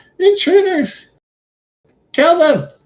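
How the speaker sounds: very high, alarmed monster shout. Game narrator voicing the enemy closest to the door in a battle: shouting. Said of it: "will shout".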